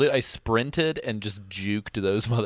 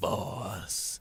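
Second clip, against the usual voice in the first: mock whispered, breathy, condescending, talking-down voice; 9 dB quieter than usual. Recalling how a character says one word, Skullface's mock-condescending "boss". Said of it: "says it in a very condescending like".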